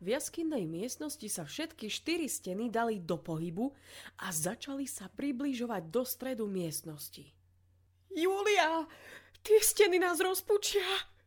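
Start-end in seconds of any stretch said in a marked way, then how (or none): 8.1-10.8 shrill, very high, terrified scream. Reading Lily screaming to Júlia as the cave walls close in, terrified scream. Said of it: "kričala vydesená".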